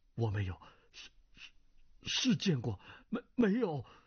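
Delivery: trembling, quavering voice, high and rising. Cui Baiquan, hands braced on his chair after hearing Murong Bo's name, in a trembling voice. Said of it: "双手撑在椅上颤声道".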